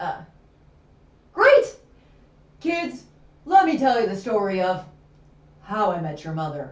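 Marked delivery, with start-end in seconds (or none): 2.6-6.7 deep voice sunk into its lowest register. Reading a scripted line while another speaker gives notes; low register voice. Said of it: "not doing a low register voice".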